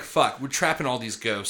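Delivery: normal talking voice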